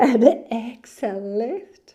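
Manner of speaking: words breaking up with laughter. Guiding a breathing exercise while her dog dreams nearby, laughing while talking. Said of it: "I'm laughing because my dog's dreaming".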